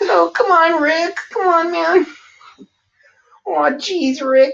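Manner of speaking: very high, whiny voice. Told he sounds like Morty, slipping into a Morty impression. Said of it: "you sound like Morty".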